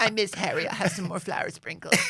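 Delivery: very high, squeaky put-on woman's voice. Imitating Harry's wife missing him while he is away: impression of Harry's wife. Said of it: "It's like she's in the room with us".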